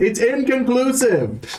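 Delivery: calling out loudly. Calling out in character across to another player: calling out. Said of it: "I call out in Sylvan".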